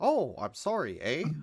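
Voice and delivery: put-on old-fashioned Canadian accent. Wondering aloud how old-timey Canadians sounded, trying an old-timey Canadian accent. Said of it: "old timey Canadian accent".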